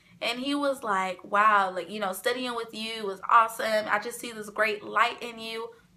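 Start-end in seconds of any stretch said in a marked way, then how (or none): none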